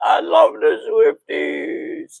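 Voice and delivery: slow, put-on sobbing, fake crying. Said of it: "I gotta sound like I'm crying as I say it".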